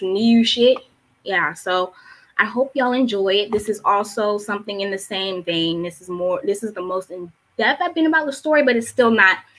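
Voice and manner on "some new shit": Baltimore accent, laid on thick. Announcing the title of a poem they recently wrote, in a heavy Baltimore accent. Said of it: "Let me put more Baltimore accent and art accent on that".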